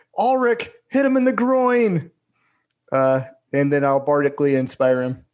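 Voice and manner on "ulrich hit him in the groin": very high, carrying yell. Playing a character in a game, calling to an ally: yelling out to an ally. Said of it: "just gonna yell out".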